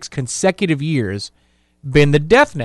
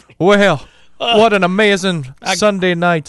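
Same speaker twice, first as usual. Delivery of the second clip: put-on blend of Irish and Southern accents. Recalling the LSU head coach's opening interview, speaker mimics him: half Irish, half Southern accent. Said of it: "That's half Irish, half Southern".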